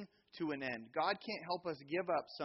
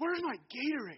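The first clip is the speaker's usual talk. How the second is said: put-on child's yell, much higher, louder; 10 semitones higher, 5 dB louder than usual. Retelling a kid shouting to his parents from the dugout, imitating a kid yelling. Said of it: "He's yelling at his parents".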